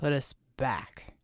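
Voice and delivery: growling, very deep, low voice. Reading a djinni's reply to a woman in a story, growling. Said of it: "Actually, he growled".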